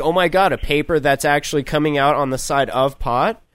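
plain

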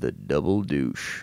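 voice sunk right down, very low. Quoting a film line, imitating Sam Elliott. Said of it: "That's such a good impression".

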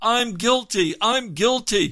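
very high, drawn-out shout. Telling a story of a prisoner crying out his realisation: shouting. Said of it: "He starts to shout it".

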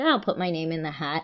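normal talking voice

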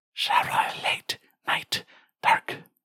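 high-pitched, slow, eerie, ghostly whisper. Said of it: "get the whisper back".

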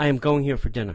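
firm, confident, earnest delivery. Showing friends the right way to say the line, confident, meaning it. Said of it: "You have to say it with confidence. Like, you mean it".

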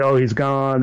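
plain

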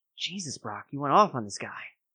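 soft, hushed, breath-only half-whisper. Voicing a character who has just come out, reacting to the arrest: half-whispering. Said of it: "and he whispers this".

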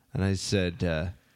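plain

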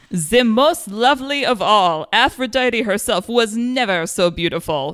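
loose, halfway, vaguely French put-on accent. Reading the handsome count's written line to Wonder Woman: vaguely French accent. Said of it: "vaguely French".

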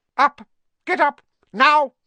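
piercing, very loud, very high, shrill screech. Narrating fiction, an aunt calls her nephew awake, shrill. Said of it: "her shrill voice which made the first noise".

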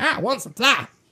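high, poorly done cartoon-style voice. Reading a sponsor plug, telling listeners what to say at the dealer, Cartman voice. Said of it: "You sound just like Cartman".

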